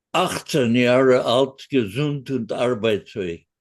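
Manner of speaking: gruff, grumpy, grouchy tone in German. Recalling saluting him at fifteen and answering in German, retelling a grouchy voice. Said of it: "I said with a real grouchy voice".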